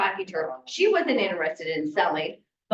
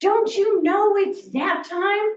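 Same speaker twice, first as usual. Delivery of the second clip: very high, shrill, screeching scream; 12 semitones higher, 4 dB louder than usual. Retelling a woman answering the door, imitating someone screaming. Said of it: "she starts screaming at me".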